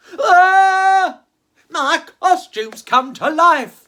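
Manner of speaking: put-on very loud, high-pitched startled cry in old man voice. Reading a story aloud where an old actor gets a scare, as a startled old actor. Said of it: "just as an old actor came to get it, / the old actor said, / just as an old actor came to get it, / just as an old actor came to get it".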